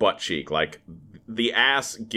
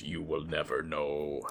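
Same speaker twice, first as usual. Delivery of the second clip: very quiet, low, hushed menacing tone; 4 semitones lower, 10 dB quieter than usual. Retelling a scene, giving Bolo Yeung's reply to the question: mock-threatening Bolo Yeung line. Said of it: "In like a very, very threatening voice".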